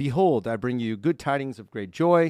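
ordinary talk, nothing marked

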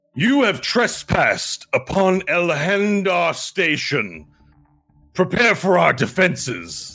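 loud, slow, booming, authoritarian delivery. Narrator voicing a figure covered in vine armor: loud booming authoritarian voice. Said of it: "speaks out in this loud authoritarian voice that he's able to boom out".

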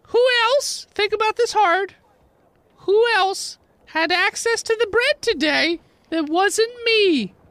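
exasperated, put-upon gnome voice, prodding and accusing. Voicing the gnome baker questioning a player: gnome baker character voice. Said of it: "So you go in there and you see a gnome with a makeshift cast on one foot. / So you go in there and you see a gnome with a makeshift cast on one foot. Has obviously been crying all day. Little red scra".

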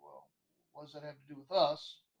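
put-on snide, snarky, sarcastic tone with swoops. Retelling own reply to a coworker about a caller: imitating own snarky tone. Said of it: "in my normal snarky tone".

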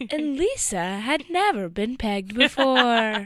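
fairy tale storybook narrator voice. Imitating the other speaker telling a story, fairy tale voice. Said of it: "your fairy tale voice".

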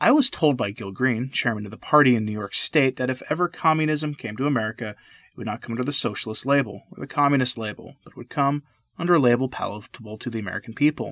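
ordinary talk, nothing marked

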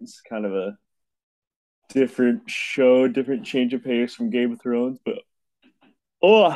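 yawning mid-sentence while talking. Speaker chatting with others about a TV show, yawning while talking. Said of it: "sorry, yawning".

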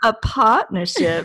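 put-on old-fashioned movie-style South Carolina Southern accent. Echoing a co-host's word back at them; mock South Carolina accent. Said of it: "You just sound like you're from like South Carolina".

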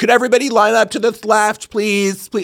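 shrill, very high, impatient yell. Speaker imitates staff who kept yelling at the group through masks. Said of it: "yelling at us like through masks".

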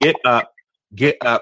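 ordinary talk, nothing marked

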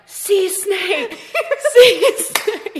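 very high, stretched-out, drawn-out yell. Retelling a swim when people spotted a sea snake: imitating people yelling. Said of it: "then they start yelling".

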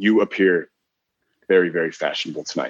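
creepy, unsettling delivery. Showing how a compliment can come out the wrong way, creepy delivery. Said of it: "you could say that in a really, really creepy way. If you say it the wrong way".

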